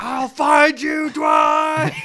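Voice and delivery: very high, stretched-out, drawn-out hollering. Speaker quotes a man who is always yelling dwight's name: retelling a yell. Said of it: "he's always yelling like".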